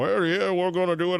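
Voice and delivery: put-on fast, high, blustery Southern accent, rattled off. Acting out Mitch McConnell as he sits back and buys time, in a Foghorn Leghorn voice. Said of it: "I sound like Foghorn Leghorn".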